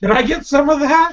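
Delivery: shrill, high-pitched shouted call. Calling back to another character, yelling across to someone. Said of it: "I yell back to Twidget".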